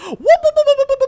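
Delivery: shrill, very loud, obnoxious whooping. Game master describing a Muppet in a pile, making its obnoxious whooping sound. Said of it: "obnoxious sound of this one going".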